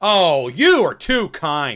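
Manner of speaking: very slow, loud, swooping, over-the-top aggressive kindness. Playing a scene partner answering a compliment, aggressively kind. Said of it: "Just like that".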